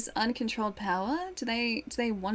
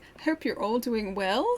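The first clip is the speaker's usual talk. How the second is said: question-like upward inflection on "well"; 5 dB louder than usual. Echoing a viewer's greeting to everyone: ends rising on "well". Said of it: "I like the upwards inflection".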